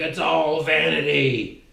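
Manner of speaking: creaky, rough, anguished, horrified cry. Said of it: "it's like he's screaming".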